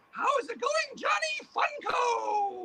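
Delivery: squeaky, very high, very slow drawn-out monster puppet voice. Performing a puppet the speaker called the boogeyman, greeting the others: boogeyman puppet voice. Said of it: "Let me call the boogeyman".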